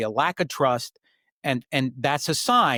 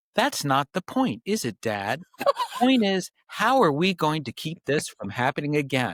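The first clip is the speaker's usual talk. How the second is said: put-on acted sarcastic, snarky, know-it-all teenage voice; 2 semitones higher than usual. A father retells his fifteen-year-old son answering through a closed door, imitating son's sarcastic voice. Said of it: "this sarcastic voice on the other side saying".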